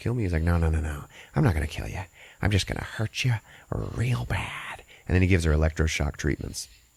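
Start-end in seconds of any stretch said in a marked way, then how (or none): 0.4-4.8 put-on voice like something in mouth. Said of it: "he's always talking like he's got something in his mouth".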